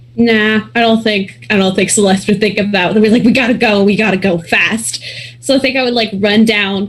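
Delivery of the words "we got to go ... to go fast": normal talking voice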